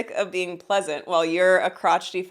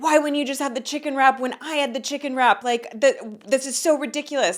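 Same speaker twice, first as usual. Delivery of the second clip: put-on exasperated, angry rant, pitched up; 6 semitones higher than usual. Retelling how a partner reacted to a chicken wrap: imitating someone super mad. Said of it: "he got super mad at me".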